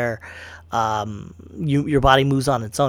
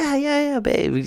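mock very high, offhand, uninterested, indifferent; 14 semitones higher than usual. Retelling how his wife answers his nerd talk: imitating wife's indifferent reply. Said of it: "She don't give a fuck".

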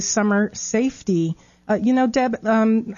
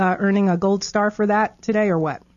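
usual speaking voice

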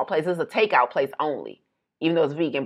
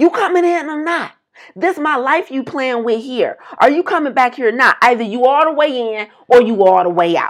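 put-on, high, furious yelling at top of lungs; 8 semitones higher, 4 dB louder than usual. Retelling a man yelling at someone he took for an employee, imitating his yelling. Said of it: "starts yelling at the top of his lungs".

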